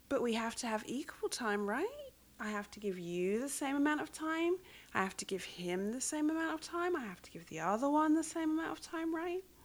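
put-on playful joking tone. Speaker retells what they habitually say in reply, retelling a joking remark. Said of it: "It's all done with a joke in my voice".

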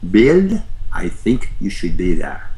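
put-on German-Swiss accent with swooping tune. Telling a story, quoting a woman who remembered him, in Elizabeth's German-Swiss accent. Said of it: "she said in her German-Swiss accent".

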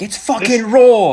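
put-on high-pitched, loud yell in a British accent. Retelling yelling at himself while cooking: imitating yelling like Gordon Ramsay. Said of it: "just yelling at myself".

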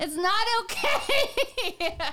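high-pitched, fake angry scolding. Scolding the other speaker, who asked to be yelled at: mock yelling at someone. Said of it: "Can you keep yelling at me?".

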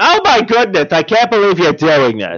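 exaggerated, laid-on motherly tone. Doing an impression of Mom reacting in disbelief: Mom impression. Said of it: "my impression of Mom is like".

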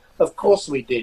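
ordinary talk

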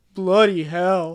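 voice dropped all the way deep, booming. Retelling a line from the movie scene, deep voice imitating Ron. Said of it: "Like, all deep".

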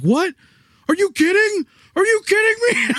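put-on, very high, mad, disbelieving angry outburst. Retelling how a guy reacted to suddenly dying in the game: imitating someone mad. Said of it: "he's so mad".

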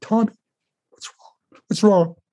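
mock teary voice, pitched way up. Retelling kneeling before a boy and asking him: retelling own tearful words. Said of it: "tears in my eyes".

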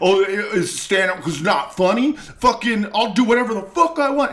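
high, furious, angry yelling rant.

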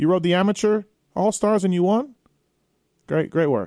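dry, sarcastic, mock-hearty tone. Praising a racer's amateur win on a podcast: sarcastic. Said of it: "I'm being sarcastic here".

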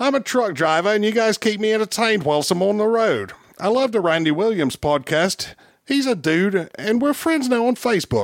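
put-on Australian accent. Using a voice, the speaker plays a listener for the hosts to guess: Australian accent.

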